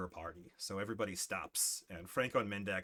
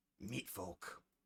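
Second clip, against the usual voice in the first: faint, hushed, breathy, barely audible whisper; 2 semitones lower, 11 dB quieter than usual. Game master voicing something hidden in the bushes to players, whispering. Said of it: "you hear something whisper".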